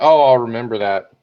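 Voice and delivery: ordinary talk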